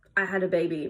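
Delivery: ordinary talk, nothing marked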